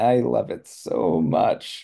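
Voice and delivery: very slow, unenthusiastic, clearly insincere sarcastic delivery. Demonstrating how tone changes a statement's meaning, in a sarcastic insincere tone. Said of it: "my tone indicates, eh, probably don't".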